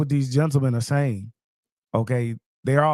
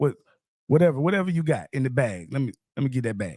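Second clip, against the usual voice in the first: plain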